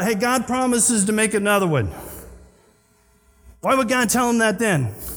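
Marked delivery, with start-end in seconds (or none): none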